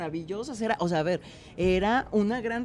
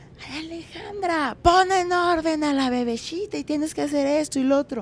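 yell called out, pitched up; 5 semitones higher than usual. Retelling how someone yelled orders from upstairs about the baby, imitating Carla yelling. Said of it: "me empieza a gritar".

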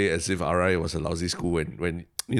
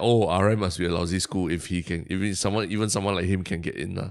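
ordinary delivery

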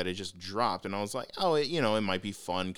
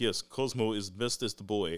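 put-on Russian accent, tough-guy thug voice. Quoting a game character, a Russian space thug: Cosmo's Russian accent. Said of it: "a Russian space thug with a Russian accent".

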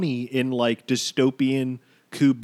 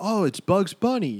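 deliberately bad line reading, pitched up; 6 semitones higher than usual. Retelling how a movie scene was acted: imitating LeBron's flat line reading. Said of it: "this flat, shitty line".

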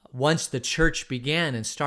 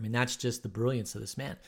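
ordinary delivery

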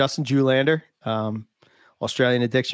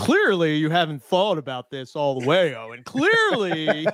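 put-on, swooping, sing-song buddy voice; 4 semitones higher than usual. Imitating a friend lecturing another friend: Nick voice. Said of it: "my Nick voice".

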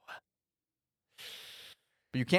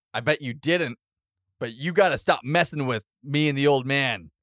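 plain

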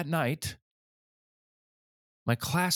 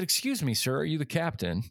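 ordinary talk, nothing marked

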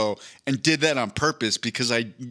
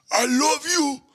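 very high, guttural, squeezed-out animal-cry voice; 14 semitones higher than usual. Imitating a fighter voicing an old gnarled sea turtle: Yoel Romero impression. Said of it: "I'm trying to do it".

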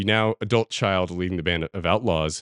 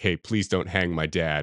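put-on acted begging boy voice, quieter; 2 semitones lower, 4 dB quieter than usual. Retelling a scene where a son begs the town boss: imitating a boy begging. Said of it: "begging the town boss".

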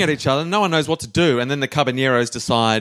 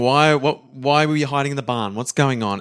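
ordinary delivery

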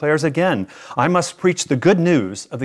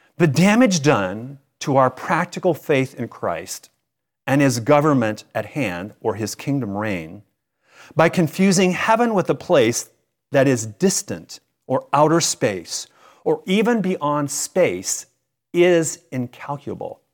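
slow, measured, careful, deliberate reading aloud. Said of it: "i'm going to read them slow".

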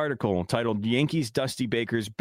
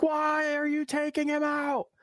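very high, drawn-out wailing scream. Retelling watching a game last night, imitating screaming at the TV. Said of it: "screaming at my T V".

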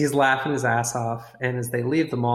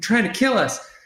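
acted, very high, angry outburst; 9 semitones higher, 4 dB louder than usual. Retelling a driver getting angry as cars swerve in front; mock pissed-off outburst. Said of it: "Maynard gets all pissed off".

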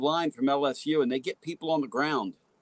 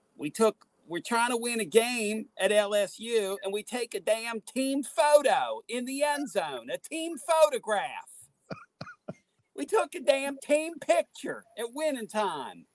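best-effort put-on Southern accent, pitched up; 9 semitones higher than usual. Retelling what your partner said on the air, in [name]'s best Southern accent. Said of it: "in his best Southern accent and said".

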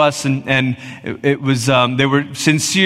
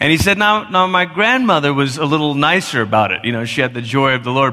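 normal talking voice

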